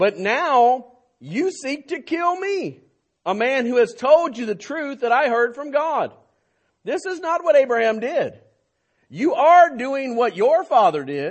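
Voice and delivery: stern, sharp rebuking tone.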